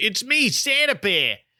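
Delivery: put-on slight New York accent. Retelling which bear speaks first in the scene: Bully Bear's slight New York accent. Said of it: "with his slight New York accent".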